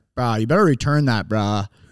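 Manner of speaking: put-on very serious tone. Retelling how someone told him to return it, retelling a very serious tone. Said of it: "getting a very serious tone".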